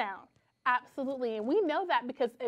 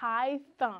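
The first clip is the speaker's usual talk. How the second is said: elongated, stretched-out pronunciation of the word. Demonstrating the th sound in a word for listeners, stretching the word out. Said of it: "I want you to stretch it".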